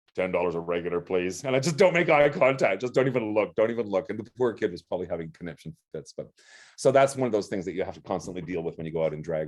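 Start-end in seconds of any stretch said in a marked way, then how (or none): 0.2-1.4 put-on voice made as manly as possible. Speaker in drag retelling ordering from the kid at the window: put-on masculine voice. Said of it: "make my voice as masculine as possible".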